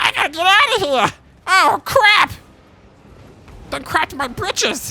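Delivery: very high, shrill, loud, awful goblin voice. Voicing an enemy shaman while commentating a battle, in a goblin voice. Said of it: "That's not my only goblin voice".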